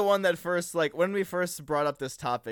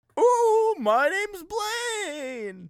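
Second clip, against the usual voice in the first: very high, eerie, spooky ghost voice. Co-host introducing themselves on a Halloween episode, in a spooky ghost voice. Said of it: "Did you introduce yourself in spooky ghost voice?".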